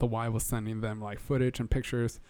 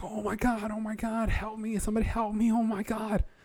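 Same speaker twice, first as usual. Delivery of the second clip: play-acted shrill, very high screams; 11 semitones higher than usual. Recounting coming out of the water while snorkeling, imitating a lady screaming for help. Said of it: "I hear this lady screaming like".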